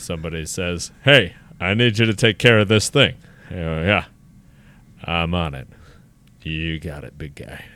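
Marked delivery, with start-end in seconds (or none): 3.8-7.6 big put-on spacey voice, much lower and slower. Speaker acts out answering a 3 a.m. request call; big deep spacey voice. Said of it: "big, deep voice where he's a guy that's a little bit spacey".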